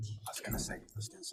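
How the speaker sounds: very quiet, breathy, barely voiced whisper. Reacting to another speaker's remark about a winner: whispering. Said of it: "You can't whisper on mic".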